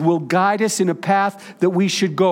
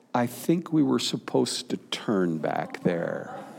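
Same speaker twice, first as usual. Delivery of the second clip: very low, quiet, hushed, small voice; 9 semitones lower, 9 dB quieter than usual. Speaker recalls his mom on family drives, imitating her quiet little voice. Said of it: "in a quiet little voice".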